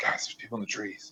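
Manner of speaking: very quiet, hushed whisper, barely audible. A player's character walks closer to the group and warns them, whispering. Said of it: "start whispering like".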